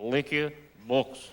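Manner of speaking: put-on thick Russian accent. Acting out a street seller approaching an American: heavy Russian accent. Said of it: "big, heavy accent".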